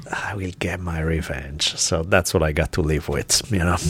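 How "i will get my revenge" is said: low, muttered grumbling to oneself. Retelling a child muttering a threat after losing an argument: imitating her muttering. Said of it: "I hear her muttering to herself".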